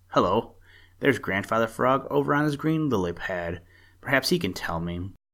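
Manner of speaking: ordinary talk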